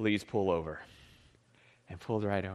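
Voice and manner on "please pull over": authoritative, commanding voice of authority. Speaker retells a highway patrol officer pulling him over, imitating a voice of authority. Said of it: "that great voice of authority".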